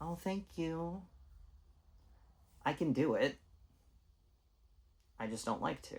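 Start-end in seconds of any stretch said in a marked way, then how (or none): 0.0-1.0 put-on polite customer-service voice, pitched up. Demonstrating the voice sometimes put on: nice customer service voice. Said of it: "the nice customer service voice".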